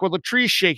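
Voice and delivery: ordinary talk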